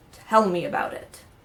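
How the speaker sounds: big booming, resounding voice from the heavens. Telling a joke, a voice from the parted clouds answers the praying parents, booming voice. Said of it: "a booming voice says".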